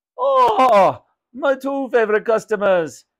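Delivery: loud, slow, drawn-out, swooping exclamation. Raj greets two customers as they enter the shop, exclaiming. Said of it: "exclaimed Raj".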